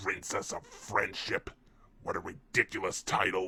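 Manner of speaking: voice with a deep growl. Reading a story, a voice speaks to the main character: growling voice. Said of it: "the voice growled".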